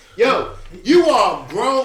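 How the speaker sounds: very loud, high yelling into the mic. Reacting to a man's move while talking into the mic, yelling. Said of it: "I'm yelling into Mike".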